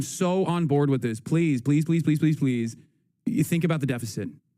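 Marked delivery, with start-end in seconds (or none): 1.2-2.8 earnest, repeated pleading. Begging lawmakers to cut the bill: begging. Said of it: "I am begging".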